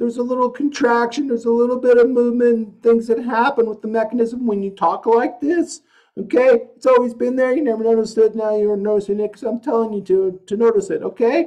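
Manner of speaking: sad, whimpering cry voice, very high pitched. A voice coach explaining a vocal technique to a student, whimpery cry mode. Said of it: "I'm going to put my voice into cry mode".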